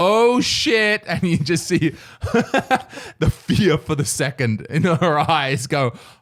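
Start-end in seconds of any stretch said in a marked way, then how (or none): 0.0-1.0 very loud, high-pitched outburst. Retelling walking in while Mariana looked the other way, a loud exclamation. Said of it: "I just very loudly went".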